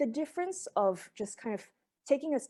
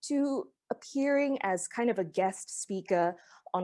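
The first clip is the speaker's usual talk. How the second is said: ordinary talk, nothing marked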